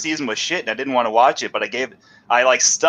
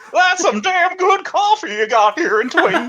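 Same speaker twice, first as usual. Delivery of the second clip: squeaky put-on voice, higher. Answering a request: Don Knotts voice as David Lynch. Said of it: "do a Don Knotts as David Lynch".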